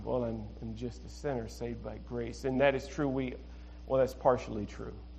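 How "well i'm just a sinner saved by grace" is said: mock melancholy, glum, downcast, mopey delivery. Imitating how some people say a phrase: mock melancholy. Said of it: "that Eeyore type of melancholy attitude".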